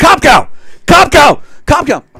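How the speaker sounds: put-on very high, shrill, swooping crazed sports fan yell. Retelling watching a tv introduction, yelling like a crazed sports fan. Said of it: "like a crazed sports fan yelling at the T V".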